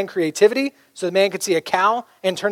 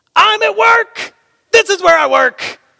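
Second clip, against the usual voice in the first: acted yell, very high, slow and drawn out; 12 semitones higher, 6 dB louder than usual. A pastor retells yelling back at a loud man while trying to work: retelling a yell. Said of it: "yelled back at him".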